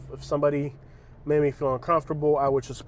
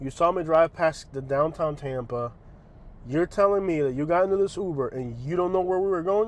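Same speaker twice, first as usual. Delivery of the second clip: plain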